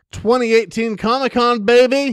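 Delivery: energetic, up on the mic. Opening a comics podcast with the other hosts, really loud and energetic. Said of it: "You are you're really loud and like up on the mic".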